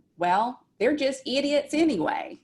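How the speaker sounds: put-on thick Southern accent. Voicing an inner voice that sounds just like their dad, in a thick southern accent. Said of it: "just like our dad in his very thick Southern accent".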